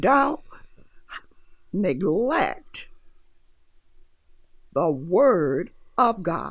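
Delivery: very slow, word stretched out with emphasis. Addressing the audience, wanting the words to sink in, said slowly. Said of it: "I said that slowly".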